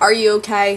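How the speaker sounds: botched southern US accent. Speaker retelling what a man asked her, attempted southern accent. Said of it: "I can't even do my own southern accent".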